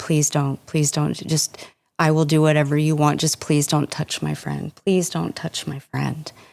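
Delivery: put-on panicked pleading. Recounting begging their dad to stop, retelling a panicked plea. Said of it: "was pleading with him".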